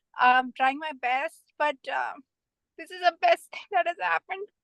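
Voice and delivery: voice catching, choked up, holding back tears. Thanking someone for life-changing classes: holding back tears. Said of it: "I hope I don't get teary".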